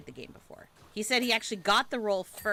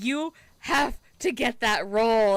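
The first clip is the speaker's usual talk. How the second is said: mock threatening tone, higher and louder; 4 semitones higher, 8 dB louder than usual. Retelling what teenage nephews said to their uncle: imitating a threatening demand. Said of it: "almost like a threat".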